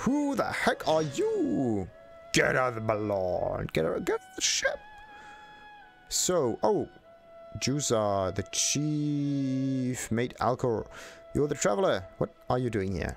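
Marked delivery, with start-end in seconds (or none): 0.0-4.8 furious, animated man's voice with swooping pitch. Playing a game, the speaker voices a character's dialogue in an angry man's voice. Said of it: "Angry man's voice yet again".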